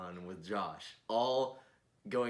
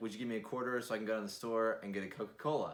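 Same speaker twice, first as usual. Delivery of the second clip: plain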